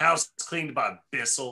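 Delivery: contemptuous tone. Naming a brand as the house cleaners: saying it with disdain. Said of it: "You say it with such disdain".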